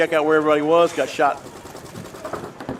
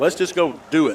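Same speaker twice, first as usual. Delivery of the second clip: normal talking voice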